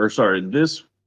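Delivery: ordinary delivery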